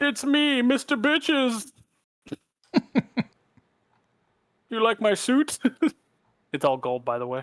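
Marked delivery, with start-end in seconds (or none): 0.0-5.6 high-pitched, heroic-sounding swinging delivery. Imagining being All Might, show what he would say, in an All Might impression. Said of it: "If I was All Might, I'd be like".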